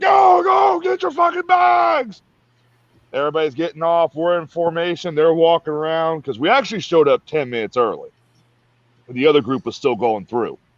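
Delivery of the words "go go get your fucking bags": put-on very high, stretched-out hollering scream. Retelling drill sergeants ordering recruits off the bus: imitating drill sergeants screaming. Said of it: "They're screaming".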